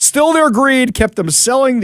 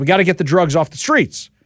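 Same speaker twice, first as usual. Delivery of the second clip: ordinary talk, nothing marked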